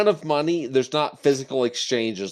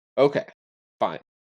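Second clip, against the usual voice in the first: let-down, disappointed, resigned giving in. Going along with a decision about the dwarves, sounding disappointed. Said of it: "You sound so disappointed".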